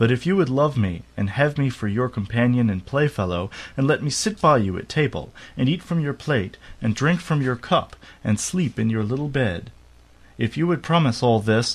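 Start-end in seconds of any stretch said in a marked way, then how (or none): none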